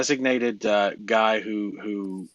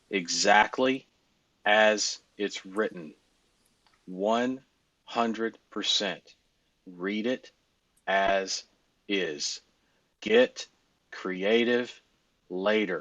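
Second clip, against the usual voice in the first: straight-faced, dead serious, very slow. Telling the group to read the script exactly as written: dead serious, no joking. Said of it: "I'm gonna say it with a straight face".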